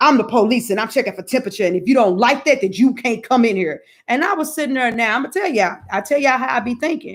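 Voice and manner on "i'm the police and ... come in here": acted-out blunt, rude, tough attitude.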